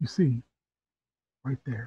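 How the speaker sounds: confiding, secretive, conspiratorial tone. At night, Anon leans over to Akko and points down the street, in a conspiratorial tone. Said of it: "They lean over in a conspiratorial tone".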